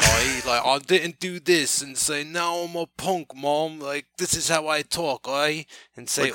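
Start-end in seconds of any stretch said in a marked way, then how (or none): 2.2-5.3 fake British accent, higher. Denying ever having faked it, the speaker shows how a fake british accent would go. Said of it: "fake British accent".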